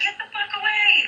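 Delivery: high, mock, snapping, yelling voice.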